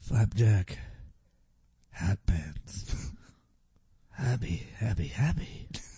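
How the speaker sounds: hushed, pleased secretive voice. In an acting lesson, the student says the words like a secret discovery. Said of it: "do it more like it's a discovery, but you want to keep it a secret".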